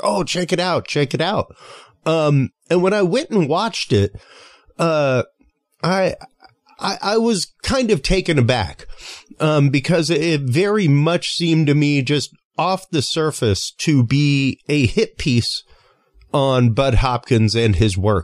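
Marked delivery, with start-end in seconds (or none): 0.0-1.5 high, excited, gushing hype. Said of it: "just very excitedly".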